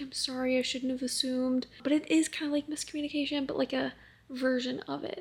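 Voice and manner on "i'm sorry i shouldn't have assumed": usual speaking voice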